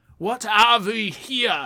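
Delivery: high, bad fake Russian accent. Two speakers admit they can't do French accents; one tries anyway: bad Russian-sounding accent.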